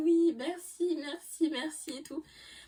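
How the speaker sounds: forced, very high, strained polite tone.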